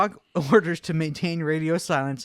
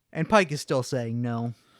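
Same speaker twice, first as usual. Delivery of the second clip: ordinary delivery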